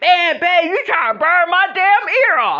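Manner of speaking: frantic, very high-pitched, loud outburst. Retelling a man waking with a lighter at his ear, imitating him frantic. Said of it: "he wake up and shit frantic like".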